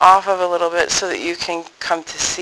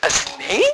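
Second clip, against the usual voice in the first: high, put-on chuckling, laughing delivery; 9 semitones higher than usual. Retelling the Father's reply during a confession, imitating him laughing. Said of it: "he's laughing like".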